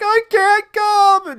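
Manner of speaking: very loud, shrill, high-pitched hollering. Retelling answering a father calling from the back door: imitating own past yell. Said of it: "and then I'm yelling back".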